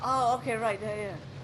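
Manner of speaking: frantic, hurried, rushed pace.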